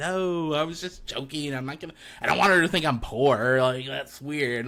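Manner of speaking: ordinary delivery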